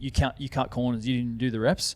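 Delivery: normal talking voice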